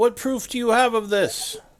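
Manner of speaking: very high, loud, challenging yell. Voicing someone in the crowd who yells back: yelling from the crowd. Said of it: "someone yells back".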